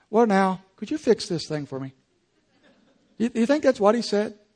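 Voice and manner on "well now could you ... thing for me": acted, very calm, relaxed and unbothered tone. Reading verse 6 aloud, acting out the king's request, mock-calm. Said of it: "Do you think he very calmly said".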